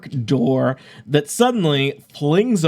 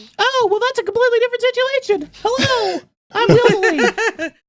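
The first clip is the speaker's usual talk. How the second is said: tiny owl voice, higher pitch. Voicing a little owl who greets the players from his door: little owl character voice. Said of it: "a Technicolor little owl".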